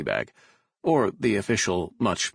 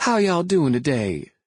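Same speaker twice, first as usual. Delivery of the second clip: very high, big, booming Mississippi Southern drawl; 9 semitones higher, 5 dB louder than usual. Describing a waitress from Mississippi greeting French customers: imitating Savannah's Southern drawl. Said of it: "a deep southern drawl, she'd startle French customers".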